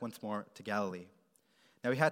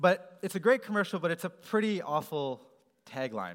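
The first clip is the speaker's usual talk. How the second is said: ordinary talk, nothing marked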